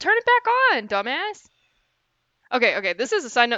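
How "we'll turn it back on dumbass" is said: shrill, very high-pitched yelling. Breaking off to answer their brother, yelling at someone. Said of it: "I was just yelling at my brother".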